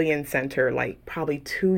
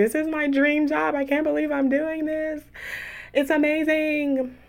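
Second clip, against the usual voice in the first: thrilled, super excited gush, voice very high; 11 semitones higher than usual. Recalling orientation at a new job, acting out being super excited. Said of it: "I was like super excited".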